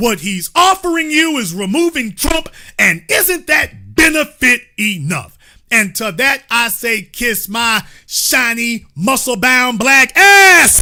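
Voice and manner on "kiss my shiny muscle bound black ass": loud all-out yell, climbing in pitch. Answering a call to put differences aside: yelling. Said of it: "You damn right I'm yelling it".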